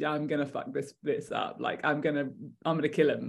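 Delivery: cool, unruffled, matter-of-fact, very calm soft voice. Imitating Tommy Lee Royce deciding to kill: calm Tommy Lee Royce voice. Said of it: "it's actually very calm when he clicks into that".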